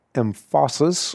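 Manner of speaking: word emphasis stressed, drawn out high and slow. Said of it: "it didn't mean that we didn't use some".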